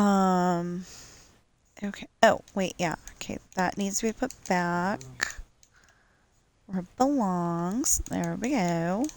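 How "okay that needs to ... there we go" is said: put-on Valley Girl voice. Putting something back where it belongs, the speaker slips into a Valley Girl voice. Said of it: "I'm saying this like Valley Girl".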